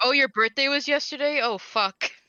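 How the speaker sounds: teasing send-up voice. Talking about Joseph having no memory: mocking imitation of Joseph. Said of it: "I'm making fun of Joseph".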